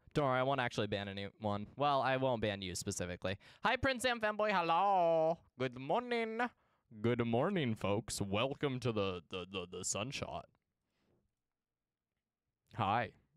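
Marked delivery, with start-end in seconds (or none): 7.0-10.5 put-on older man voice, much lower. A streamer greeting viewers at the start of the broadcast, middle-aged man voice. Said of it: "Why'd you turn into a middle-aged man?".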